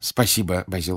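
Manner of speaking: ordinary delivery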